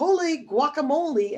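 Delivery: mock, loud, high-pitched yelled exclamation. Describing a cat character from a children's book: character yelling. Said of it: "he always yells".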